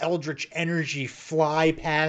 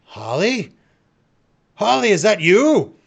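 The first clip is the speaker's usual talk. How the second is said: loud, high, stretched-out calling voice; 5 semitones higher, 6 dB louder than usual. Voicing a figure who recognizes holly and calls out to her: familiar voice calling out. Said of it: "you hear a familiar voice go".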